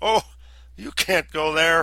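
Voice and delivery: very loud, high-pitched outcry. A ranger, told where two travelers are going, cries out to them: exclaiming. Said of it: "then exclaimed".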